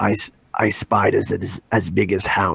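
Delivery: low, rough, raspy growl. Trying another impression, quoting a line about ice spiders: Tormund Giantsbane impression. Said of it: "I'm trying to do another impression here".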